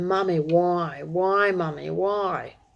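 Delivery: very slow, dragged-out pleading, each "why" stretched. Retelling what a little boy said to his mother: imitating a child pleading. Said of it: "he was pleading with her".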